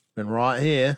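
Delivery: fake Australian accent. Speakers trading accents, one saying the phrase in a bad Australian accent. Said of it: "was more New Zealand".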